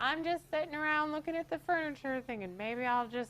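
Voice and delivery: put-on high, silly old grandma voice. Retelling Grandma's phone reply to Shannon, imitating Grandma's voice. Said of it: "It's the kind of the voice I use for Grandma".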